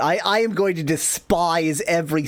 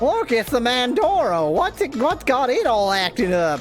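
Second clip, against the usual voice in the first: high, storybook-style goblin creature voice; 8 semitones higher than usual. Reading a game story aloud, voicing goblins spotting a monster: goblin voice. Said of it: "This is how goblins talk, apparently".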